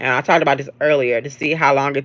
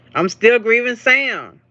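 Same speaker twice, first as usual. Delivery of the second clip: sudden, high-pitched yelled outburst; 9 semitones higher than usual. Talking about a beloved character being written out, yelling. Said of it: "Sorry for yelling".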